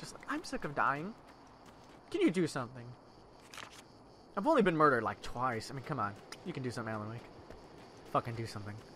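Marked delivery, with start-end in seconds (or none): 0.3-2.8 mock-casual, nonchalant, much quieter. Repeating a game character's line while playing, in a mock-nonchalant tone. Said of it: "that's so, like, nonchalant".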